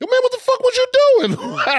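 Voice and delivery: very high, loud, shocked call.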